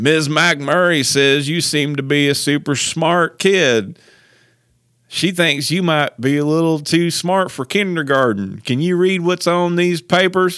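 put-on thick, heavy Georgia Southern accent, said loudly. Retelling what a man said to them as a kindergartner, thick Georgia Southern accent. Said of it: "like this really thick kind of Georgia Southern accent".

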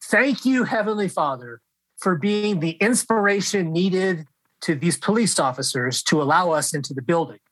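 usual speaking voice

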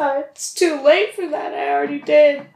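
high, loud, flustered pleading game-character voice.

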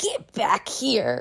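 put-on sassy tone dripping with attitude. Retelling how God pulled the speaker back from a cliff: sassy voice as God. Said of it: "he wouldn't say it with that much sass".

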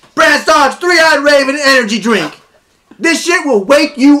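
very high, shrill, loud yelled ad-read delivery. Host doing a sponsor read for an energy drink, yelling. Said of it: "I yell at all my sponsor reads".

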